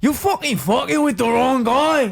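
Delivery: very high-pitched, spat-out, scornful jeering way up high. Trying an impression after saying it could be done: Conor McGregor impression. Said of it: "I could kinda do a Conor McGregor".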